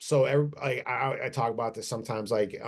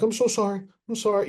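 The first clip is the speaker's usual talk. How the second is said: put-on very high, frightened little kid voice; 11 semitones higher, 5 dB louder than usual. Retelling apologizing to a lady who snapped: imitating a scared little kid. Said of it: "like I'm a scared little kid".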